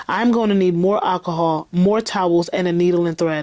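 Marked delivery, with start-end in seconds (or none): none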